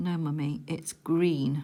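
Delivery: put-on expressionless, deadpan child voice. Recounting the speaker's child answering the speaker's question: imitating a child's deadpan reply. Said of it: "he just sort of looked at me deadpan and said".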